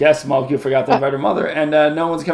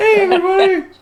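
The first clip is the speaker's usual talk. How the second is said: fake female voice, higher and louder; 5 dB louder than usual. Trying a voice after being asked to do a female voice: put-on female voice. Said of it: "give you permission to do a female voice".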